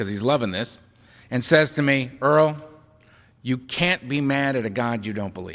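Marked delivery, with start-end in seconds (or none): 2.2-5.5 acted serene, very calm, quietly delighted, gently amused. Retelling a sponsor's reply to ranting about God: imitating Donald speaking very calmly. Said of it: "very calmly, with a twinkle in his eye".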